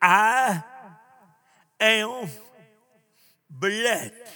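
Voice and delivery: spaced-out I am blessed. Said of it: "Your story is".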